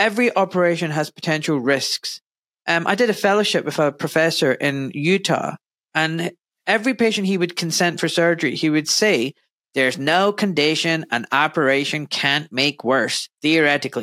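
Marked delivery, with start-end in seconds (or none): 9.7-14.0 awful put-on American accent. Quoting a former professor's line to surgery patients, in an awful american accent. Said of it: "That's an awful American accent".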